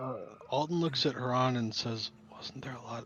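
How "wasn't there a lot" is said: barely audible, very quiet whisper. Player voicing Alden, speaking to Haran, whispering as quietly as possible. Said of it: "whispers as quietly as he possibly can".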